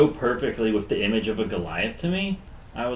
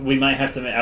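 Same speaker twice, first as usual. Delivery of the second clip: ordinary talk, nothing marked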